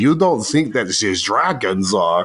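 put-on pseudo German accent. Describing a racist character's first appearance, quoting him in a pseudo german accent. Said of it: "he has like this pseudo German accent and he's like".

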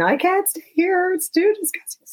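play-acted very high, tearful crying voice. Retelling a phone call from mom, imitating mom crying on the phone. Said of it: "she's crying in the phone saying".

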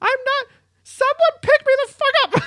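squeaky, very high-pitched, loud yell. Voicing a fallen character in a standoff, Fuzzly yelling for help. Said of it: "Just kind of yelling in the middle".

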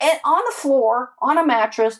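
furious, high, rising angry voice.

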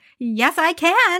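mock saucy talk-back tone. Retelling the scene where the Beast pounds on Belle's door, imitating Belle's sassy reply. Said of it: "the way she says it is so sassy".

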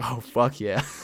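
put-on chuckling, amused, laughing through the words. Recounting how an authority figure answered a scared question, acting out his reply while laughing, imitating someone laughing while talking. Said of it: "in the verge of tears".

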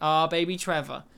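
ordinary talk

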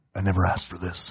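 acted deep, gruff character voice. Giving a hint in a guessing game, imitating how the character talks: Adam Jensen voice. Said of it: "It's kinda how he talks".

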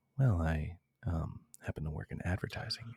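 mock announcer voice. On a date in a sketch, answering what they do for work, in a soothing NPR voice. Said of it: "Why are you talking like that?".

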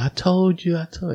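put-on very high-pitched, shrill screeching scream. Retelling how a researcher reacted to the evidence: imitating someone screaming. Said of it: "he's screaming at them".

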